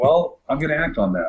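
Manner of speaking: ordinary talk, nothing marked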